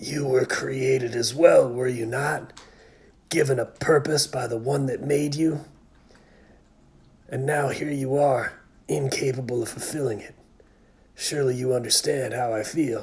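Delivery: low, hissing serpent whisper. Voicing Janemba addressing Broly, low hissy Janemba whisper. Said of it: "I like a sort of serpenty voice for this Janemba. Maybe something low and hissy, almost like a whisper".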